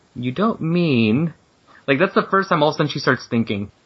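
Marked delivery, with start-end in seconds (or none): 0.2-1.3 tiny, really small, shrinking voice. Retelling a comic character suddenly realizing something: imitating a really small voice. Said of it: "voice gets really small".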